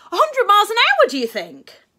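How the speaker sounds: very high, very loud, swooping excited squeal. After going over his handlebars, a boy asks a question, squeaking excitedly. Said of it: "squeaked Charlie excitedly".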